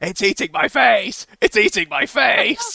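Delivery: shrill, very high, very loud scream, climbing. Retelling a game where a player was being eaten, retelling a player's scream. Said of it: "he was just screaming".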